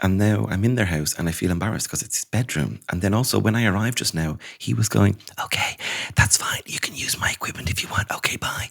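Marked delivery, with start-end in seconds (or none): 5.4-8.7 soft, hushed, whispered delivery. Retelling what he said when the speaker arrived at his house, imitating his whispering. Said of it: "you're whispering".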